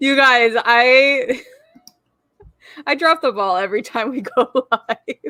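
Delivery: giggling through the words, swooping pitch. Greeting viewers at the start of a live video, giggling while talking. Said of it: "I can't stop giggling".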